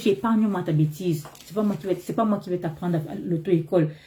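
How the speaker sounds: ordinary talk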